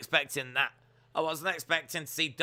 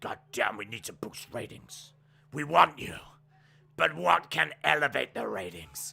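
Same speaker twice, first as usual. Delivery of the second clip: rough, rasping, creaky voice. Asked by a co-host to say this in Vince's voice, doing a Vince McMahon impression. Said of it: "say this in Vince's voice".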